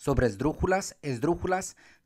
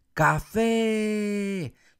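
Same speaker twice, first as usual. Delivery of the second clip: shouted café, -fé stretched and stressed; 7 semitones higher, 4 dB louder than usual. Teaching Spanish stress by shouting words, shout café with stress on fé. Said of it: "le grito la palabra café".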